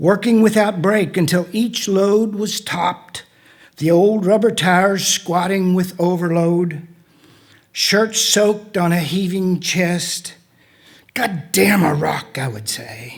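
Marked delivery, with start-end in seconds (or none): 11.1-12.4 acted, choked, exasperated delivery. Reading aloud about hauling rock loads, quoting the past self, retelling an exasperated curse. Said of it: "choking itself with exasperation".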